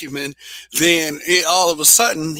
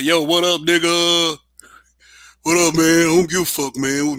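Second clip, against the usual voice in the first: mocking fake voice, laid on. Recalling the voice impression he used to do of them, mocking put-on voice. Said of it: "I used to do a damn voice impression of what I thought they sounded like".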